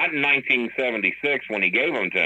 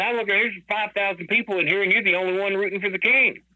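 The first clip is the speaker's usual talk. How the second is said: very high, piping speaking voice; 11 semitones higher than usual. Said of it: "he's got this high-pitched voice".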